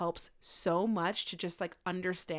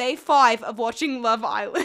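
put-on Italian-tinged English accent; 4 semitones higher, 10 dB louder than usual. Riffing on 'day one of' style videos, in a mixed English-Italian accent. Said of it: "What accent was that?".

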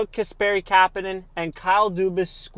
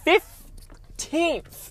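slight voice crack, jumping very high on "15th"; 10 semitones higher than usual. Announcing the trade return to Leafs fans, voice cracking a little. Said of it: "My voice cracked a little there".

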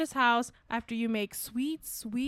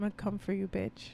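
soft, sultry, seductive erotic tone; 3 semitones lower, 5 dB quieter than usual. Delivering a line a co-host says should open the podcast, with an erotic delivery. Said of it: "So erotic. The way you said it".

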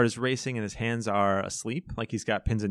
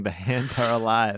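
ordinary delivery

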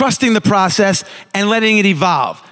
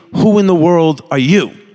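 blunt, impolite, demanding tone; 3 semitones lower than usual. Recounting a man walking in and confronting him, retelling an impolite demand. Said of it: "not as politely".

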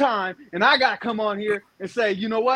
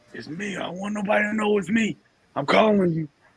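imitated whisper. Acting out LeBron James secretly phoning Rich, LeBron James whispering. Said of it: "why are you whispering?".

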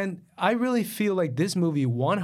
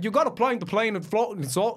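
put-on strong Scottish accent. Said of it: "heavy Scottish accent".

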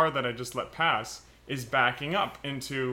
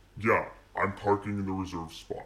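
dry, low, flat, expressionless deadpan; 5 semitones lower than usual. Retelling a bigger bald guy parking in the reserve spot, mock-deadpan.

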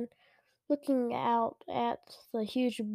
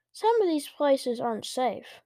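ordinary delivery, nothing marked

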